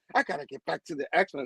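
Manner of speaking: mock eager, excited, heavily stressed, emphatic delivery. Retelling a scene where a character proudly mentions the X-Men: imitating Kamala's excited emphasis. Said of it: "She kinda emphasized".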